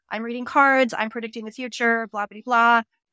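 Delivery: ordinary delivery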